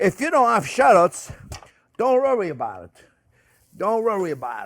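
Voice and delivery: put-on New York accent, easygoing delivery. While sauteing shallots in garlic olive oil for viewers, speaking in a New York accent. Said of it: "That's my New York accent".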